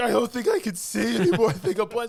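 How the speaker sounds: very high-pitched sobbing, blubbering crying voice. Retelling a scene where a man blinded on the ground speaks: imitating someone crying. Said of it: "on the ground crying".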